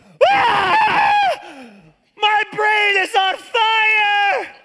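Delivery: very high, very slow, drawn-out howl of pain. Speaker recounting rubbing alcohol dripping into the ear, retelling a scream of pain. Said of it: "I am screaming in pain".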